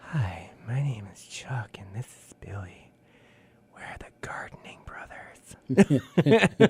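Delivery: slow, hushed, whispered ASMR voice. Joking about making an ASMR video as gardening brothers, in an ASMR voice. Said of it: "doing like an A S M R like that".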